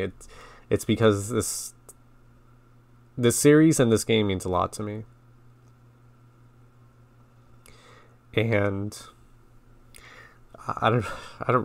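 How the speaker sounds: choked-up emotional voice. Explaining why this playthrough matters so much: getting emotional. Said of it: "really don't know why I'm getting emotional".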